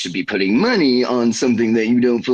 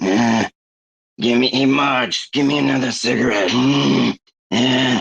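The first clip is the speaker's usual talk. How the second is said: slow, lazy, drawn-out cartoon character voice; 3 semitones higher than usual. Picturing a cartoon sister asking Marge for a cigarette: Marge's sisters from The Simpsons. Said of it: "Marge from The Simpsons. She's got her sisters".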